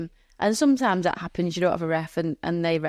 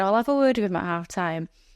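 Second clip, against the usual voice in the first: usual speaking voice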